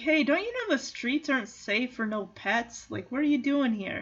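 startled, surprised dog voice calling out. Retelling a movie scene as Riley, who finds the lost pets: imitating a surprised dog character. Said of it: "Riley is surprised".

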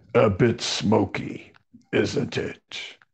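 hard-man tough-dude voice. Retelling what a holy man said by the fire: imitating a tough dude. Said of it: "he talks like a real tough dude".

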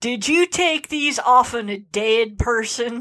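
indignant, outraged, heavy Southern drawl. Retelling what the guy with her shoes said, in a mock-outraged, strongly Southern accent. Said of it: "said in these just outraged, deeply Southern accent".

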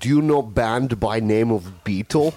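put-on Belarusian-accented English. Speaker impersonating a Belarusian former coworker, Belarusian accent. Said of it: "Here's an impersonation of a Belarusian I used to work with".

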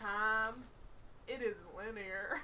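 very slow, laid-back, drawn-out drawl. Trying the impression laid back: laid-back Matthew McConaughey impression. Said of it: "I'll lay back and say it".

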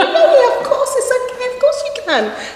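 very high-pitched, forced soothing tone.

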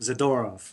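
stress on second-to-last syllable. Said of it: "it's the second to last syllable you usually accent".

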